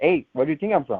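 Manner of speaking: ordinary talk, nothing marked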